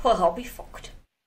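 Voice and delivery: very high-pitched put-on Scottish accent. Showing how to speak with a Scottish accent: Scottish accent. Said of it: "There's your Scottish accent".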